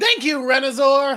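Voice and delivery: very loud, high ring-announcer call. After working out a tricky name, saying thanks in an announcer voice. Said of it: "You have a great announcer voice when you do it".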